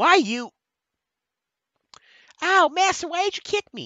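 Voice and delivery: very high, squeaky, swooping put-on voice. Voicing a character in a skit who was just kicked, in a high-pitched voice. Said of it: "Too damn early for me to be using a high voice".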